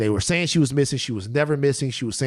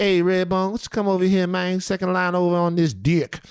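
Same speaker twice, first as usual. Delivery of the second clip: put-on New Orleans street accent, laid on, pitched up; 7 semitones higher than usual. Explaining what won a woman over, in a put-on New Orleans accent. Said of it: "accent that got her".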